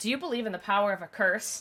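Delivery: ordinary delivery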